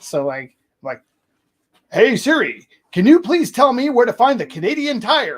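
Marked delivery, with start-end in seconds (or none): 1.9-5.4 shrill, very high, very loud heroic superhero voice. Asking Siri for directions so it understands, in a put-on superhero voice. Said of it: "I speak in my superhero voice".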